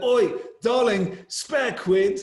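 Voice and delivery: loud, high street-call voice. Retelling what a homeless man outside his London flat said: imitating a London homeless man. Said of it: "He's like".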